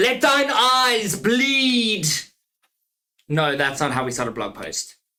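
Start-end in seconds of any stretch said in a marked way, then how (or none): 0.0-2.1 very slow, drawn-out, loud, high-pitched shout. Asking listeners how to start a blog post, then answering by shouting. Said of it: "I'm sorry for shouting".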